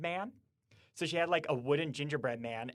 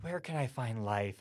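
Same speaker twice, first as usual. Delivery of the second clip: acted defeated-sounding tone; 3 semitones lower than usual. Retelling what a boy asked, imitating a defeated tone. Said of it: "was just like the defeated tone".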